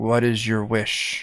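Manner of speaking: quiet secretive whispering. Voicing a magic ring that asks the wearer's wish: whispering ring voice. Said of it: "the ring whispers to you".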